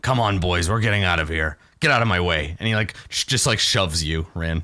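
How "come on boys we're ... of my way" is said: brutish orc character voice. Voicing an orc who orders the other orcs to leave: voicing an orc. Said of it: "he turns to the other orcs and he's like".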